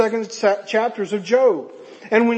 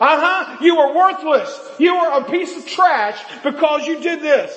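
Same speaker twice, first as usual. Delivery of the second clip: play-acted, hard, harsh, condemning, accusing tone; 6 semitones higher than usual. Acting out the devil accusing someone after the sin: loud accusing devil voice. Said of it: "the voice changes from a whisper to a".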